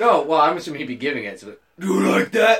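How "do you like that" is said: gravelly character voice, a bit louder. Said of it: "with his gravelly voice".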